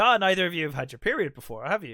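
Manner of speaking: put-on patronizing, condescending, talking-down voice. Retelling what a nurse said: imitating a patronizing nurse. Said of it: "She could have been less patronizing".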